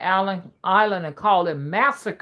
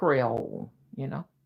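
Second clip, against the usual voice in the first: plain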